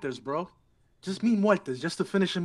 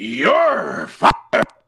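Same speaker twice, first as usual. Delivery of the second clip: deep, very slow, drawn-out delivery, each word dragged; 6 dB louder than usual. Giving his best impression of a famous catchphrase: Vince McMahon impression. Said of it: "I'm gonna give you my best impression of uh, your Vince McMahon's".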